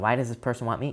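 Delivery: ordinary delivery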